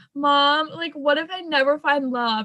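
mock hysterical crying, sobbing through the words. Retelling a phone call with Mom while out walking, reenacting hysterical sobbing. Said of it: "literally scream crying, like hysterical sobbing".

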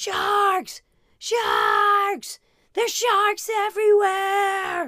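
put-on very high, loud, frightened child's scream. Recounting a scared young child on the water, imitating a scared child screaming. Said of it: "she's screaming this".

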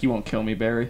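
usual speaking voice

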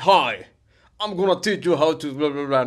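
poor put-on British accent. Retelling an online ad where the chef speaks: bad British accent as Gordon Ramsay. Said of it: "No sé hacer acento británico".

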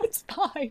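high, teary, choked-out voice with a brave face. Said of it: "I started just crying ... I was like".

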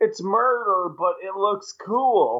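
high, slow, innocent, nonchalant cheerful tone.

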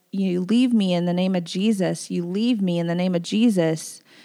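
anguished crying out. Retelling ordering the enemy away while praying: retelling crying out to God. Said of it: "as I was crying out to the Lord".

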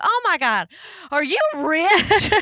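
put-on Southern accent, high. Retelling a phone call with a man, the speaker answers in a put-on Southern accent. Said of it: "In like a Southern accent".

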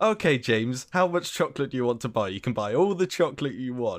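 very loud, booming mother voice. Retelling what his mum said to a kid, imitating mum speaking very loudly. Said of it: "like very loudly".

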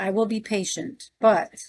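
plain reading voice

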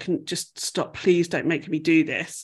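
put-on pleading voice. Retelling a TV scene where Joel asks a man to stop: imitating Joel pleading. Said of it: "Joel's, like, pleading".

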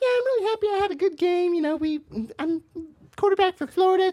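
very high, squeaky athlete voice. Imitating a quarterback heard talking for the first time: Tim Tebow voice. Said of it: "you expect him to be down here".

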